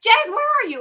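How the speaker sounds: frantic, very high shriek. A mother retells a call from her son's phone, re-enacting her own screaming. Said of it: "I'm like screaming".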